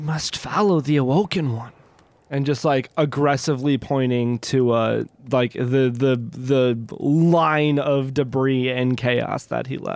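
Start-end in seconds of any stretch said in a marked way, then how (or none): 0.0-1.7 put-on crackly character voice. A player voicing Alder in the game, pointing the way, Alder's crackly little voice. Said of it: "in like his crackly little voice".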